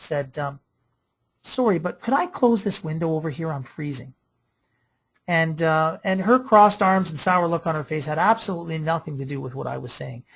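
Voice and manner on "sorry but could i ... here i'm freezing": put-on sweet, very nice, politest tone. Retelling an audience member's question after a talk: imitating a very nice voice. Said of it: "in the nicest voice ever".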